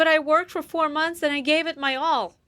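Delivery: high, fake, dramatic, tearful pleading crying voice. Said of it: "she's crying like her life is over".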